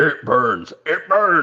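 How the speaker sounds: devilish demon voice. Recalling a comedian's famous bit: Satan voice. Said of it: "he does the greatest Satan voice ever".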